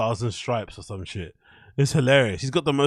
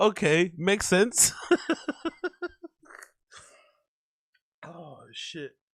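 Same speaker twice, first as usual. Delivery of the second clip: laughing so hard it turns to crying, higher; 5 semitones higher, 3 dB quieter than usual. Reacting to a clip, laughing so hard, crying. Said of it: "I'm crying. I'm literally crying".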